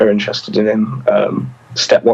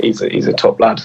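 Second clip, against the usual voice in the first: ordinary delivery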